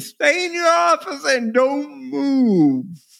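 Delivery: mock screaming, shrill and high-pitched. Retelling a woman screaming at the speaker while cleaning the house, retelling her screaming. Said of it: "she's like screaming at me".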